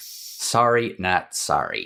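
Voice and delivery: quick put-on American accent, played for laughs. Apologizing for covering Zelda on the site, in an American accent impression. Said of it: "that was my American impression".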